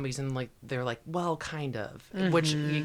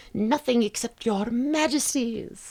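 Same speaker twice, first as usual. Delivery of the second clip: shrill little piping voice, higher, louder, slower; 9 semitones higher, 6 dB louder than usual. Reading a character greeting the king and queen, in a shrill little piping voice. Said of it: "says in his shrill little pipping voice".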